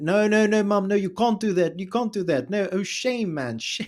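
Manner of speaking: put-on full South African accent, very high pitch. Speaker imitates a woman on the phone with her parents back home, South African accent. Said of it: "she goes like full back into South African".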